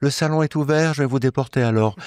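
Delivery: smooth, honeyed small villain voice. Pay tribute to your actor by imitating his villain, in a sugary David Talbot villain voice. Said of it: "Il est toujours très doucereux".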